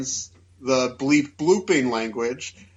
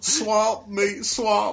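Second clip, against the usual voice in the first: bad put-on Southern politician voice, higher; 8 semitones higher than usual. Repeating the character's line on purpose: terrible Bill Clinton impression. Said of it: "terrible Bill Clinton impression".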